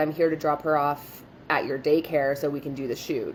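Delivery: ordinary delivery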